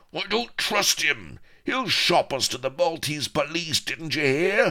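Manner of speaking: very high-pitched, roaring pirate bellow. Narrator reads Firebeard's outburst during the huddle, roaring. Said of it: "once Firebeard roared".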